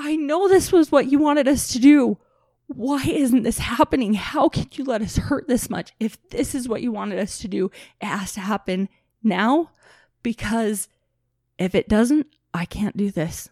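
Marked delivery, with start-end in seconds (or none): 0.0-5.9 acted screaming, high and loud. Retelling what they yelled at the sky one early morning: retelling screaming at the sky. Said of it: "I just started screaming at the sky".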